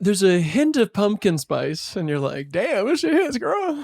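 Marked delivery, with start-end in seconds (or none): 2.5-3.8 very high-pitched, impressed exclamation. Joking about a recipe with pumpkin spice: Martha Stewart impression. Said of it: "that's my Martha Stewart impression".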